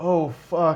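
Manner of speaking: imitated flat, half-hearted, unenthusiastic delivery. Retelling how a broadcast line was read: imitating Corey saying it without conviction. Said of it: "lack of conviction".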